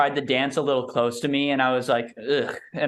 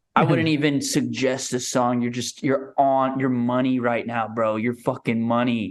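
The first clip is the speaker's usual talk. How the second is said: mock whispering; 2 semitones lower than usual. Retelling whispering into the DJ's ear: imitating a whisper. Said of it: "whispering in his ear and I'm just like".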